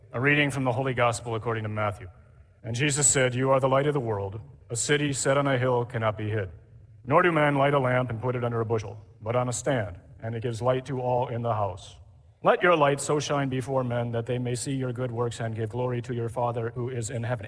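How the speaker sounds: low, droning liturgical reading.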